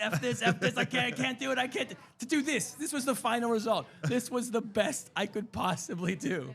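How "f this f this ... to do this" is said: hard, fed-up, frustrated swearing. Retelling struggling to draw while a daughter mocked: imitating own past frustrated cussing. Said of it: "I was cussing, like, so hard".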